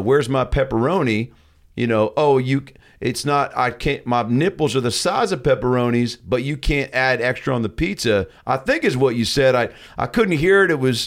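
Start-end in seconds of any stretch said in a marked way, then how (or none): none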